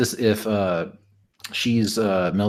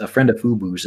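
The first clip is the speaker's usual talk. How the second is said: ordinary talk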